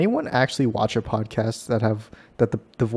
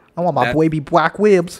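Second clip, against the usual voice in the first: mock Boston accent, higher and louder; 6 semitones higher, 6 dB louder than usual. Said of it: "I haven't done a Boston accent".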